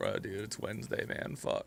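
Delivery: put-on whispered, breathy, spaced-out stoner voice. Voicing what a character who looks stoned would say: imitating a stoned character. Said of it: "he looks stoned".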